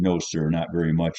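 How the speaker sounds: plain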